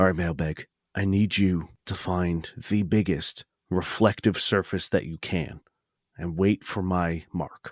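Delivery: low, soft, hushed half-whispered voice. Voicing a character who half-whispers into a comm to Mailbag: half-whispering quietly into a comm. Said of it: "I whisper quietly into my comm to Mailbag".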